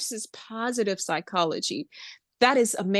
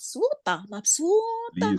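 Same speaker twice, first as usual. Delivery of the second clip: put-on "mapsuta" pronounced with a Spanish accent; 4 semitones higher than usual. Recalling how they said a word they were being taught, Spanish-accented pronunciation. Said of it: "I would say it in a Spanish way".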